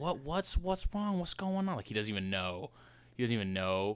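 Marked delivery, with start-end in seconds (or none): 0.0-1.8 feigned confusion, playing dumb, higher pitch. Retelling a friend caught by his dad: imitating someone playing dumb. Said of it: "he's still trying to play dumb".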